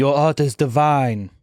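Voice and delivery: put-on slow, poorly done French accent. Imagining a french woman praising the speaker's art, in a bad french accent. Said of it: "I can't do a good French accent".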